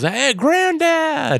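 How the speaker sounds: high, slow, drawn-out yell. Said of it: "Mark sees him and yells".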